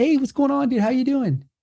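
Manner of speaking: very high, happy, cheerful, friendly voice. Retelling how people are greeted at the booth: imitating own cheerful greeting. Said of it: "I'm smiling, I'm happy".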